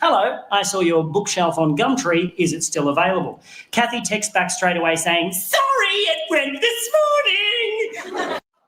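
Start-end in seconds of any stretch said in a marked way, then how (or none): 5.3-8.4 very high annoying put-on voice, "morning" drawn out. Retelling a seller's text reply about a bookshelf in an annoying Kathy voice. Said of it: "I gave you an annoying voice in the retelling".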